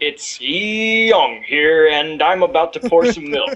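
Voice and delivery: put-on documentary-style narration with "young" stretched out. Friends joking about narrating everyday life, narrator voice. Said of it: "with his narrator, narrator voice?".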